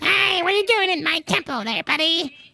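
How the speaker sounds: very high little critter or rodent voice. Showing the different voices a creature's heads can have: a rodent creature voice. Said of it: "the rodent".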